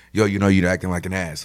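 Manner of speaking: normal talking voice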